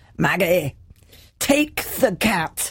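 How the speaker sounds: put-on short line in a Scottish accent. Speaker retells a voice calling to her from behind, in Alex's Scottish voice. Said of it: "this Scottish voice from behind".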